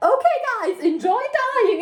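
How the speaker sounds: beaming, very high, extremely happy cheery voice. Retelling what a staff member said to visitors: imitating a very happy voice. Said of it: "the happiest voice ever".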